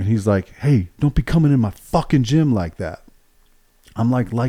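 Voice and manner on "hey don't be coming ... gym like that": angry, pissed-off voice, pitched up. Retelling what the officer said to him in the gym, retelling an angry outburst. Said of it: "he's fucking pissed".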